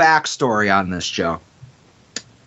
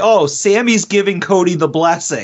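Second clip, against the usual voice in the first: ordinary delivery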